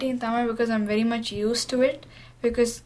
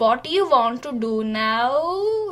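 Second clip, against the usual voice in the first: exaggerated put-on Indian accent, played for laughs. A youth radio reporter showing how she can change her accent: funny Indian-y accent. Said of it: "change my accent into a very funny Indian-y accent".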